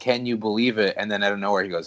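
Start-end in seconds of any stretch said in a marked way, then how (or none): none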